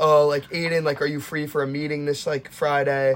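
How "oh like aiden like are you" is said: usual speaking voice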